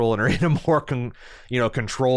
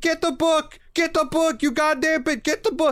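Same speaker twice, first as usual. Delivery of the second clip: put-on very high screaming, repeated rant. Recounting an argument, the speaker imitates a man screaming at a woman. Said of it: "He just starts screaming".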